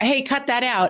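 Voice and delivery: high, scolding shout. Retelling yelling at a kid in texas: imitating her own yell. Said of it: "sometimes I'll yell to a kid".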